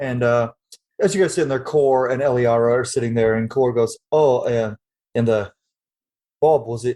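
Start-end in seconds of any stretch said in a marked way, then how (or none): 4.1-7.0 put-on English accent. Voicing Cor thanking a player's character: British accent. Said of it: "I went British there".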